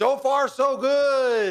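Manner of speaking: very high shout, "good" drawn out. Calling back from outside to the others inside the building, yelling back. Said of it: "I'm gonna yell back and be like".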